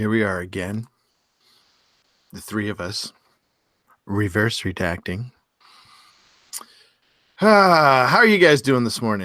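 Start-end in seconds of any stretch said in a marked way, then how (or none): 0.0-5.3 smooth, low, calming, soothing podcast-host delivery. Opening the podcast and greeting the other two: soothing podcast voice. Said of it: "you got your podcast voice on".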